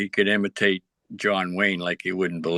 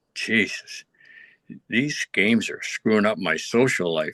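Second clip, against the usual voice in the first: imitated muttering under the breath. Retelling what a man said after sitting down on the bus, retelling a mutter under breath. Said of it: "under his breath he says".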